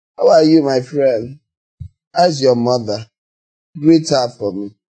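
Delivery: low, condescending, patronizing talking-down voice. Explaining a voice one is able to use, the speaker demonstrates a patronizing voice. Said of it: "The patronizing voice".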